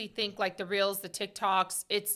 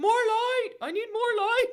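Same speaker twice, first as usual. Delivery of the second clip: play-acted shrill, very high-pitched yell; 13 semitones higher, 4 dB louder than usual. Recounting yelling at everybody for light, retelling a yell. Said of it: "I'm yelling light to everybody".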